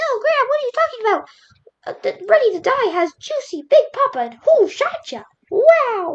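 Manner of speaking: very high, squeaky, bad cartoon mouse voice. Imitating people who would object to the album choice: bad imitation of people objecting. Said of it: "sorry for that very bad imitation".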